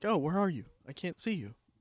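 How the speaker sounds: mechanical, robot-like speech. Imitating the man heard talking on the call: robotic voice. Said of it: "he's got a very robotic voice when he's talking".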